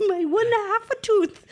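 put-on Transylvanian vampire voice.

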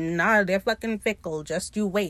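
ordinary talk

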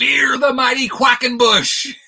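shrill, very high stadium scream. Retelling what a drunk guy in the stands screamed: imitating someone screaming. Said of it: "screams out".

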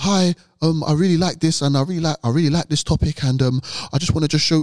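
restrained delivery. Told they are too loud, the speaker demonstrates how they can't speak, restrained speaking. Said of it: "No, I can't speak like that".

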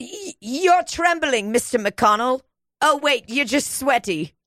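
bad put-on Swedish accent. Doing a mocking impression of Greta Thunberg: very bad Greta Thunberg accent. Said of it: "I'm giving her a very bad accent".

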